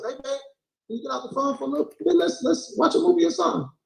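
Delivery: nice pleasant voice. Arguing with a woman, showing how a man asks his partner in a nice voice. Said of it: "you can say it in a nice voice".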